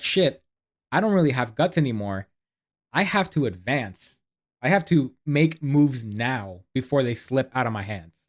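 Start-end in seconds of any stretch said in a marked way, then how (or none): none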